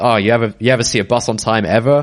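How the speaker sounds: ordinary talk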